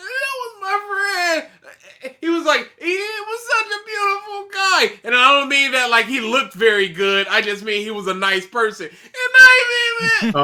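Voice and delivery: put-on high, trembling, quavering, squeaky voice. Mimic a man playing the victim for sympathy about his friend, imitating a trembling, squeaking voice. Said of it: "doing this trembling voice squeaking thing".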